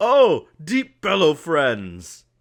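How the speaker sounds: very high, booming sing-song, drawn out. Voicing a character greeting the players: Deep Bellow character voice. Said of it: "when he sees you, he goes".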